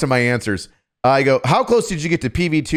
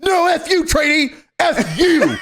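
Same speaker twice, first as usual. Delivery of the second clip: screaming, higher; 14 semitones higher than usual. Retelling teasing a trainee about her name: imitating own past scream. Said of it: "I would scream".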